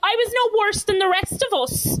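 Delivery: high, fast, indignant. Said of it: "so indignant".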